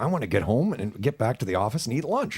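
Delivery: acted mutter under breath. Retelling a customer picking an inside wall for an outlet: imitating muttering under breath. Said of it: "under my breath".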